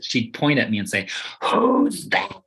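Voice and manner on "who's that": carrying, loud stage whisper, very high. Retelling a great aunt pointing at the speaker at dinner: imitating Florence's loud stage whisper. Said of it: "and in a loud stage whisper".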